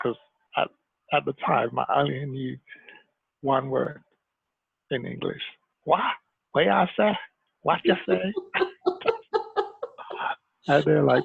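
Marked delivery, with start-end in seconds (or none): 5.8-8.3 high, loud Jamaican patois. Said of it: "it was patois, broken English".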